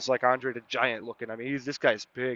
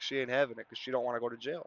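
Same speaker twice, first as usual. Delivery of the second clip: ordinary talk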